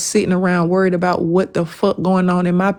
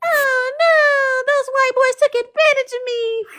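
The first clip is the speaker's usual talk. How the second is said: mocking put-on victim voice, higher pitched. Imitating someone who tried to play the victim next morning: mock imitation of playing the victim. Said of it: "tried to cosplay a victim".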